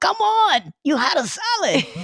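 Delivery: very high, sing-song, put-on Latin American accent.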